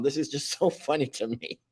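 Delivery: amused words broken by laughter. Telling everyone about Mom's new channel, laughing while talking. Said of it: "I'm sorry I'm laughing".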